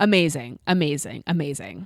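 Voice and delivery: dry, mocking, sarcastic tone, repeated three times. Reading out a driver's post-race team radio, retelling sarcastic praise. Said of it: "This is all said sarcastically".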